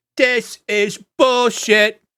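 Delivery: very high, shrill, loud chorus of tiny voices. A narrator describes the group nearing Troll Skull, voicing a chorus of little voices yelling. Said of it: "a chorus of little um, voices um, yelling out".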